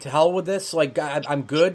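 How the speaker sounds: ordinary talk, nothing marked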